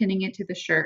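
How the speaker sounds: usual speaking voice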